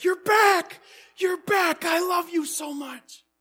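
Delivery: very high, shrill, full-volume, joyful yell. Reading a story, a man greets his returning brother: yelling as loud as he can. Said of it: "yelling as loud as he could".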